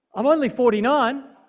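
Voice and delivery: fairly loud voice. Retelling own reply to a man insisting on a seat, reasonably loud voice. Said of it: "In a reasonably loud voice myself".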